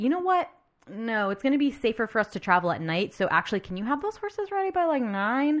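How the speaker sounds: urgent, high-pitched and fast.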